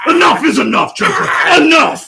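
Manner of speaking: very loud, high, furious angry shout. Acting a scene, choking the Joker on request: angry Batman voice. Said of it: "can you angrily choke Aaron like Batman".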